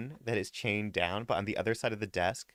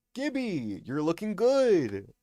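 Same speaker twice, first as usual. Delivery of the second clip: put-on Canadian accent, higher and louder; 8 semitones higher, 4 dB louder than usual. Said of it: "'Cause you sound Canadian".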